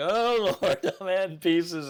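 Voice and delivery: very slow, stretched-out, high, loud yell. Retelling watching a tower bend while putting on guy wires: retelling own yell. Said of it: "I'm yelling".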